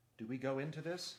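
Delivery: plain reading voice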